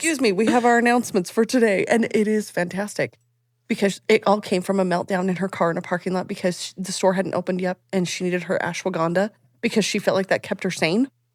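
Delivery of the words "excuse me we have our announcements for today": put-on formal announcement voice. Talking about a creator seen on her feed, imitating Melanie's announcements. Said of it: "she does announcements".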